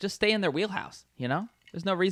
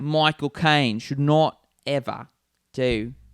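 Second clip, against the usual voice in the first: hint of Australian accent; 7 dB louder than usual. Naming an actor who shouldn't do American accents, with a bit of an Australian accent. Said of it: "you have like an Australian thing".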